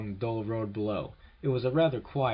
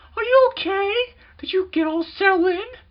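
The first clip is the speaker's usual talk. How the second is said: frantic, very high and very loud; 10 dB louder than usual. Reading a story aloud, Jeff's mother on the phone to him: frantic high-pitched voice. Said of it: "answered a frantic, high-pitched voice".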